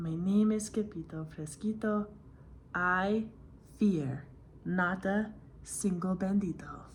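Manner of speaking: very quiet, soft, hushed words. Narrating a story as the sword fighter Scipito speaks, very soft voice. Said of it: "in a muy, muy soft voice".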